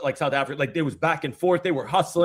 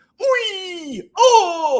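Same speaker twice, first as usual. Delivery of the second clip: very high, sing-song, swooping cheering yell; 6 dB louder than usual. Retelling how he reacts when a World Cup goal is missed: imitating his own World Cup cheer. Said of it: "why do I sound like that?".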